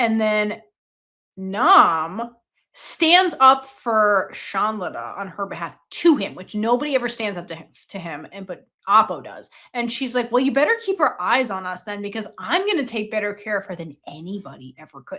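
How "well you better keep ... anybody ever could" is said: grave, serious, threatening, menacing tone. Retelling a character's warning to a disapproving dad: imitating a serious, menacing warning. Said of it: "serious, menacing kind of way".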